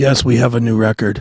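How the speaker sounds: brooding, dark, morbid, low-energy delivery. Retelling Wednesday 13 in front of a camera: imitating his interview persona. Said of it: "he puts on the, the persona when he does interviews".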